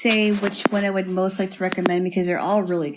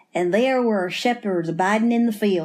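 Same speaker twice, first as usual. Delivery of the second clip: put-on Southern US accent. Asked to read the scripture passage aloud in a southern accent: southern accent. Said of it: "will you give it in a southern accent?".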